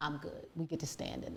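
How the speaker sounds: soft, quiet, calm, settled resolve. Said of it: "I was like".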